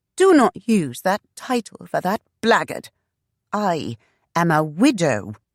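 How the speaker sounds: curt, high, angry snap. Reading a novel aloud, a woman rejects the word husband: snapping angrily. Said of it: "Shanna snapped".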